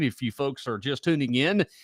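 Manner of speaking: normal talking voice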